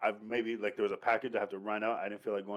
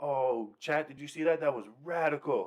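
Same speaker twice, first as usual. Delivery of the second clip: play-acted, all-excited, pitched-up gushing voice; 5 semitones higher, 3 dB louder than usual. Retelling a show scene where a streamer crashes into water: imitating an excited streamer. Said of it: "He was all excited".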